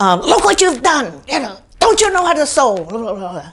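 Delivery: put-on yelling. Recounting a man scolding a woman with a needle in her hand, imitating someone yelling. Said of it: "he starts yelling at her".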